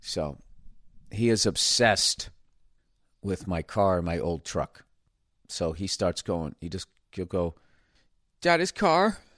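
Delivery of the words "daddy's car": put-on very high, emotional, pleading toddler whine. Retelling how a toddler asks for his father's car: imitating a child's emotional plea. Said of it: "He starts at that emotional level".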